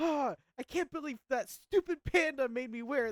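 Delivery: high-pitched, shrill, enraged screaming. Retelling a man throwing down a hat he was made to wear, retelling an angry scream. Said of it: "he throws it on the ground".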